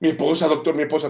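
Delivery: high-pitched screaming, yelling out. A doctor recounts a patient hit by a car, imitating the patient screaming. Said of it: "el paciente empieza a gritar".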